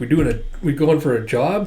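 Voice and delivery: ordinary delivery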